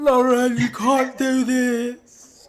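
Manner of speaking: put-on man shouting. Retelling how a guy in the hallway shouted into the room: imitating a man shouting. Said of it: "the whole time he's shouting".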